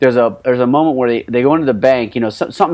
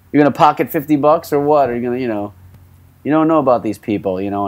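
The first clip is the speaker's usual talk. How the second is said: ordinary talk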